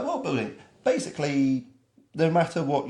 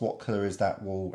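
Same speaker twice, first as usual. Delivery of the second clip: normal talking voice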